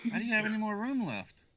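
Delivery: very high, shrill, loud, exasperated ranting yell. Joining a retelling of a delivery driver's rant caught on camera, imitating a yelling driver. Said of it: "with the the driver like yelling".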